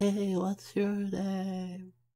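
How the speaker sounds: timid, shy, very quiet yell. A shy character calls out to a tall figure in the distance: shy, very quiet yell. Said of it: "I yelled out, but since I am too shy".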